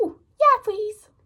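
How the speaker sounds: very high, tiny, cutesy voice. Retelling a boy accepting an offered piece of chocolate: little voice. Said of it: "in a little voice".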